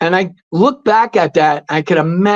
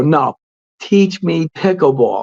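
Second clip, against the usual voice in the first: imitated determined, forceful-sounding tone. Retelling asking a pickleball teacher again for lessons: imitating own determined tone. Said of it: "You sound like you're on a mission".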